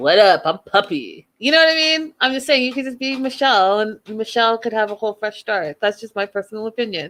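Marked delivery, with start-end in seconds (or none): 0.0-1.3 put-on slow, tough, inmate-like way of talking. Joking about how the name puppy sounds: put-on inmate-ish voice. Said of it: "Puppy sounds very inmate-ish".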